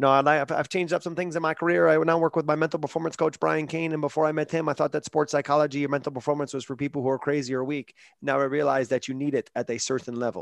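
put-on speaking with a French Canadian accent. Quoting a fighter's locker-room interview from UFC.com: Georges St-Pierre's French Canadian accent. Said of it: "with his French Canadian accent".

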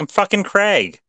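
mock indignant outburst, very high-pitched. Imagining Craig being asked if he's the Brave Little Toaster, mock-mad as Craig. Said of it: "he gets all mad".

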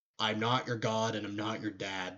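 plain

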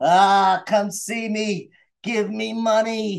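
very slow, drawn-out, dopey stupid-sounding put-on voice. Retelling what a rude convention guest said: imitating a stupid voice. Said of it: "And that stupid voice".

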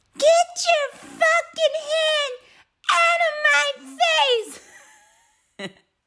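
very high, put-on tipsy drunk girl voice. The speaker retells another man's reply, in a put-on drunk girl voice. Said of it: "in like a drunk girl voice".

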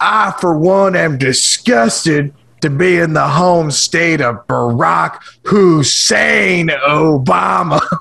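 heel-style wrestling promo voice.

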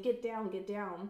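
plain

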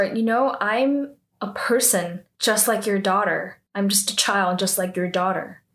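ordinary delivery

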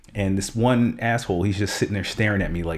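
plain

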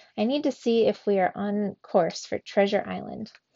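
ordinary delivery, nothing marked

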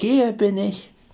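high, taunting, teasing little cry. Hiding under a coin and teasing the guards, teasing call. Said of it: "Dabei neckte es noch die Wachen und rief".

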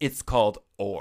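cheeky, sassy know-it-all tone. Retelling a correction made during a board game: imitating own sassy retort. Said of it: "I was super sassy".

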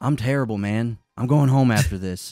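imitated pained voice. Retelling a delivery driver's answer to how he's doing: imitating a pained tone. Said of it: "the most pained expression".

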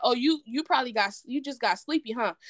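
acted-out sarcastic tone. Retelling a phone call, speaker replays own remark to him: retelling own sarcastic remark. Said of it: "Me being very sarcastic".

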